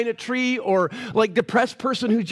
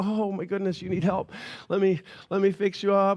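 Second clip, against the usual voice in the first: casual, laid-back, breezy, friendly helper-like voice; 3 semitones lower, 4 dB quieter than usual. Acting out Jesus strolling to Jerusalem: casual laid-back Jesus impression. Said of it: "just kinda walking, like".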